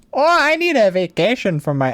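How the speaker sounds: clumsy Midwest accent. Joking about people in visor hats, attempting a bad Wisconsin accent. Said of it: "I can't do a Wisconsin accent".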